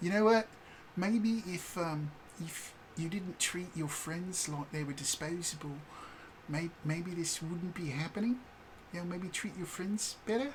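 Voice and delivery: gentle heartfelt tone. Retelling a line said to a mind-controlling boss at a game's end: reenacting a heartstring-tugging line. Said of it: "do this little kind of tug at heartstrings".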